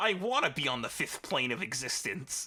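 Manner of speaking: nerd voice. Teasing the other speaker by acting out a stereotypical movie nerd: stereotypical movie nerd voice. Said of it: "stereotypical movie school nerd who's like".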